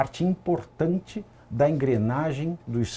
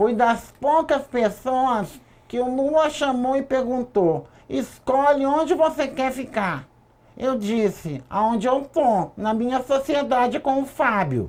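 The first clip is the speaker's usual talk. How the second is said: higher-pitched put-on woman's voice; 11 semitones higher than usual. Reading out a woman's messages obtained by police: imitating Roberta's voice. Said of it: "eu vou tentar fazer a voz dela".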